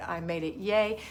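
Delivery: ordinary delivery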